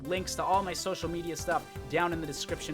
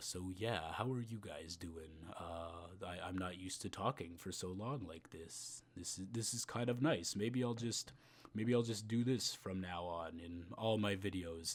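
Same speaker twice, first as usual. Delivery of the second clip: put-on deep voice, much lower, quieter; 10 semitones lower, 12 dB quieter than usual. Video maker chats to viewers in a voice that is not their normal one: deep put-on voice. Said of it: "in a deep voice".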